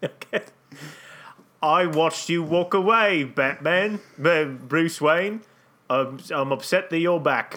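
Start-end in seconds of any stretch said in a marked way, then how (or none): 1.6-7.6 put-on acted elderly English butler voice. Continuing the made-up scene after being asked to keep playing: Michael Caine voice. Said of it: "you just keep playing Michael Caine".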